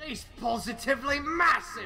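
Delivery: sudden switch to fake put-on Australian accent. Spotting a lizard, he suddenly talks differently; put-on australian accent. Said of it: "Why are you talking like that?".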